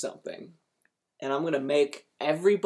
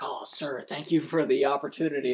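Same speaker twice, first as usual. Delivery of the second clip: mock, put-on earnest delivery. Retelling an actor's first role thanking the director: imitating an earnest tone. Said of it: "he's very, like, earnest".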